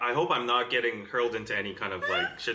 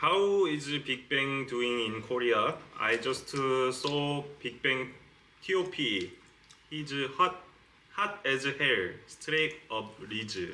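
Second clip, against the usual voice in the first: English with a put-on Korean accent. Asked to speak in a Korean accent, reading out a comment; Korean accent. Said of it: "Say something in a Korean accent".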